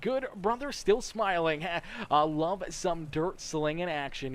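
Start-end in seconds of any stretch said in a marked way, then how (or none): none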